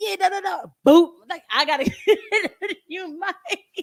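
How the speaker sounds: very high, animated squealing voice. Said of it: "I was all animated".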